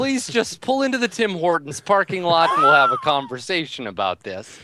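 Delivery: put-on courteous Canadian-accented voice.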